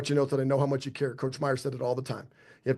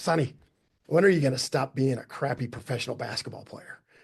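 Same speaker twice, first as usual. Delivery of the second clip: head coach voice, needling and teasing. Retelling a coach grabbing the phone on a call: Coach Meyer's voice. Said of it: "But he said it in his voice".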